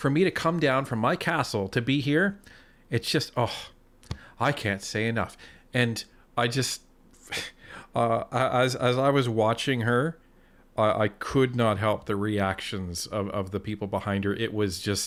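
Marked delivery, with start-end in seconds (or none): 0.0-5.4 put-on, mock-condescending tone. Mimicking a woman who talks down to people while praising them: mock-condescending tone. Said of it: "she was saying in such a condescending tone".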